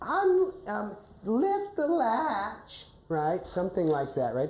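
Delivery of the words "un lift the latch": put-on high, slow, weak, feeble old-woman voice. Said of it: "a high-pitched voice".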